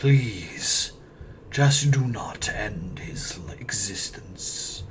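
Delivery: deep, echoing voice. Game master voicing a parent pleading with adventurers, deep echoing voice. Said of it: "deep, echoing voice".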